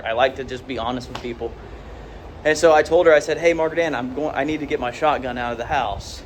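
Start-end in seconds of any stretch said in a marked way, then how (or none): none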